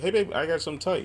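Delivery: high, fast, sweet, cheerful announcer-style delivery.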